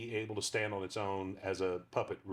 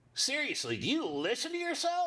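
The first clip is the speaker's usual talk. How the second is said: very high, swooping put-on talking dog voice; 4 dB louder than usual. Asked to do his dog character's voice for one line, talking dog voice. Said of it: "can you do the voice".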